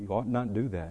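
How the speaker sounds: soft, low-toned, hushed murmur. Speaker recounting how they answer coworkers who blurt God's name, in a low tone. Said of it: "in a low tone I'll go".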